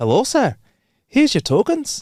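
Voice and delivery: put-on Scottish accent, pitched very high. Retelling a lounge visit in Scotland, the speaker voices the person handing out drink tokens in a Scottish accent. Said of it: "Don't watch my Scottish accent".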